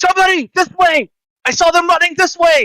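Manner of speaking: very high, shrill alarmed shout. Player in a guard disguise calls out, shouting in a guard's voice. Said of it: "I'm gonna shout with the guard's voice".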